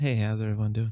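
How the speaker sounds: soft, sensual radio voice, brought down low. Show co-host greets everyone at the episode's start, in a sensual NPR voice. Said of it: "That was kind of um, sensual".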